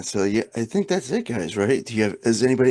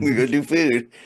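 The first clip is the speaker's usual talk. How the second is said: mock alien-sounding voice, higher; 4 semitones higher than usual. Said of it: "you sound like an alien".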